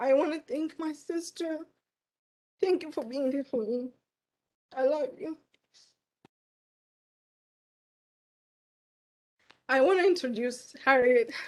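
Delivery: speaking through tears. At a pinning ceremony, thanking a sister and introducing the next speaker, crying. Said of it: "Sorry for crying".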